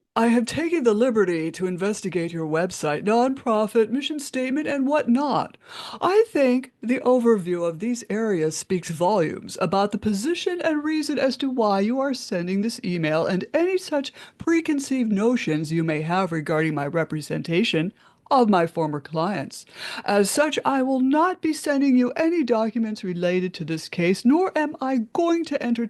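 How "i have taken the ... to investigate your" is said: plain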